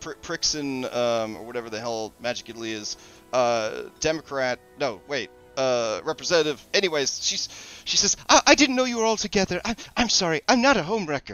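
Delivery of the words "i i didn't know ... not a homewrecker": very high, flustered, embarrassed stammer. Voicing a shopkeeper realizing the customers are together: flustered and embarrassed. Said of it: "she becomes, like, really flustered and embarrassed".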